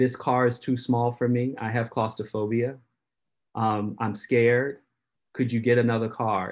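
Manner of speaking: normal talking voice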